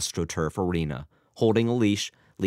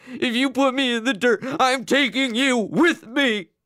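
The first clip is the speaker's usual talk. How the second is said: very high, hysterical shrieking scream; 4 dB louder than usual. A father yells at his son Albert; screaming. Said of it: "he screamed".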